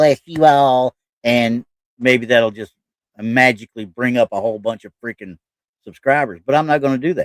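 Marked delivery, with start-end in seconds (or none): 0.0-0.9 high, loud, put-on Southern girl accent. Speaker jokes about getting more subscribers, then puts on a southern girl accent. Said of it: "I guess I need to get me a Southern girl accent like this right here".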